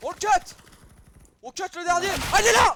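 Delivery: high, loud, excited shouted yell.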